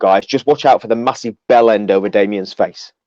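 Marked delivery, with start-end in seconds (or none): none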